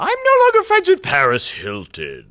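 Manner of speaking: loud, high-pitched, swooping delivery. Retelling what someone said, talking like George Takei. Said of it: "also talks like, uh, George Takei".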